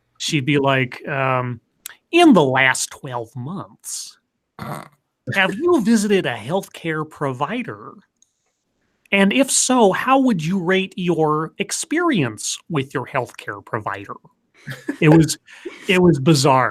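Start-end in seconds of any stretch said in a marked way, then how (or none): 2.1-14.2 put-on Southern accent, every word carefully over-enunciated. Retelling a phone survey caller's questions: imitating a Southern accent, over-enunciated. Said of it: "she had a really Southern accent".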